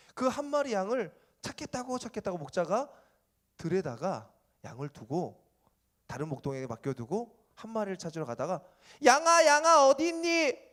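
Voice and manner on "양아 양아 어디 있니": very high, very loud, drawn-out calling voice. Telling a story of a lost sheep, shepherd calling voice. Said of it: "이거 목자 성대모사야".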